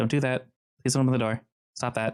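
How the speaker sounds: mumbling, words half swallowed. Game narrator voicing a woman as the players force the door: muttering under her breath. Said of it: "muttering under her breath".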